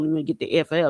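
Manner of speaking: ordinary talk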